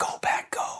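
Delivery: hushed, quiet, low-volume delivery. Retelling seeing a man in a Packers jersey in Tokyo, quietly saying it to him. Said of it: "I just quietly say".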